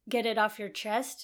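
ordinary delivery

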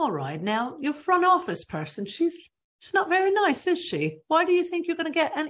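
poor put-on English accent. Acting out a woman who whips salons into shape, in a terrible English accent. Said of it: "This is a terrible English accent".

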